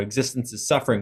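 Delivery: normal talking voice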